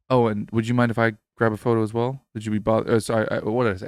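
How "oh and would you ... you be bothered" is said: imitated very soft, whispered voice. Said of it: "in the softest voice ever".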